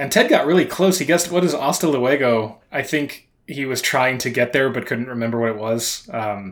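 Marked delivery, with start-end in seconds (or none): none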